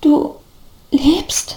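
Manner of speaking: stuttering speech. Narrator reads a man's stunned question to someone who rose from the dead, stammering. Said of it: "stammelte der Mann nun".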